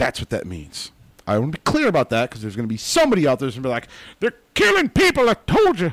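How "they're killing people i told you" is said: put-on high swooping old-man voice. Voicing a hypothetical critic out there, in Anderson from Beavis and Butthead voice. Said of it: "I sound like Anderson from Beavis and Butthead".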